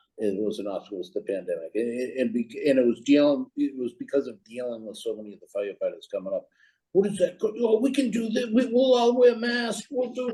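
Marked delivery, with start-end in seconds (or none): 6.9-10.4 put-on yelling, higher pitch. Retelling firefighters complaining about masks: imitating firefighters yelling. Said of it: "they're yelling at me".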